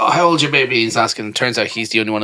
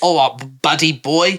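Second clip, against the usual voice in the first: imitated English accent; 5 semitones higher than usual. Asked to repeat what a man said, in his accent: imitating his english accent. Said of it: "Tell what he said and in his accent".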